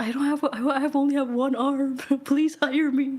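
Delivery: fake, pitiful, pleading woe-is-me voice. Suggesting a pity story to get hired: mock pitiful plea. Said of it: "Use a pity story".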